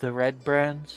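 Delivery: soft, quiet, secretive half-whisper. Playing a guard captain leaning in to a farmer: quiet half-whisper. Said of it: "quietly whisper so that the kid can't hear".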